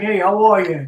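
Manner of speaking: acted British-accented voice. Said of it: "he's talking to me in a British accent".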